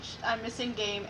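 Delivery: ordinary delivery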